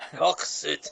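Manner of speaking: Scottish accent. Repeating a rogue character's name as told: Scottish accent. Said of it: "with a Scottish accent".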